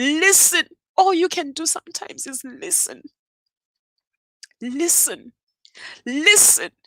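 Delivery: tearful voice, crying while speaking. Addressing listeners about being there for others, crying while talking. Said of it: "And I'm crying".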